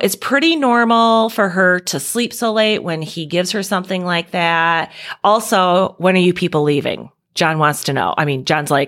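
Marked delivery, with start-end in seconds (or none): none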